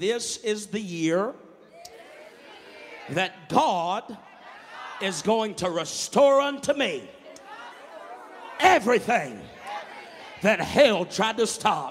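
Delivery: very loud, high scream. A preacher tells the congregation to scream a declaration, screaming. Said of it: "open your mouth and scream".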